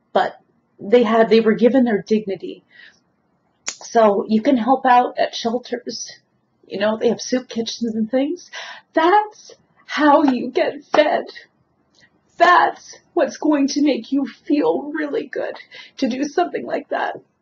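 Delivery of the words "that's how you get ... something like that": choked-up, tearful crying, pitched high. A speaker, deeply touched, keeps talking while crying. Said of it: "I'm crying too much".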